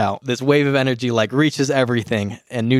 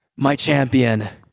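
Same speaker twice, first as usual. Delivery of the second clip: put-on woman's voice. Narrator voices a woman speaking inside a character's head, woman's voice. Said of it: "you hear a woman's voice say".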